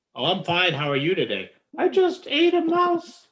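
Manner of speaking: slow, swooping hand puppet voice. Voicing a puppet that answers a greeting: puppet voice. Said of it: "have the puppet sing it".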